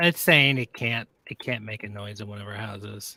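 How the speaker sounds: let-down, disappointed tone. Explaining that the program can't make a noise: sounding disappointed. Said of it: "You sound so disappointed".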